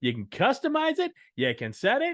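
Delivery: weird, high, loud carnival barker voice. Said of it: "I got some weird Carnival Barker voice there".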